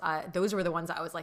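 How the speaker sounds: ordinary delivery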